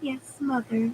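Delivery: cloyingly sweet tone. Elaine answers her mother in a sickly sweet voice. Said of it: "Elaine said in a sickly sweet voice".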